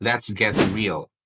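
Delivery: ordinary delivery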